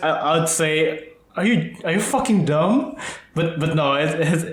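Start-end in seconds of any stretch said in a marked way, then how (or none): none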